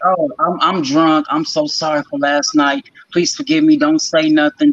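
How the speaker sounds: sarcastic, pleading, high-pitched, drawn-out mocking delivery. Quoting the other person's earlier apology back during an argument: mocking imitation of someone's apology. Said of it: "so it wasn't the fact that you said".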